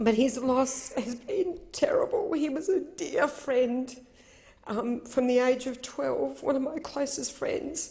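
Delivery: crying through words. Speaking about the loss of a close friend since age twelve, crying. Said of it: "I'm crying".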